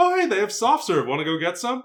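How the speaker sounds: friendly, easygoing, kind and animated. Showing how a character should offer to get soft serve instead: kind older sister. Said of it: "Kind older sister".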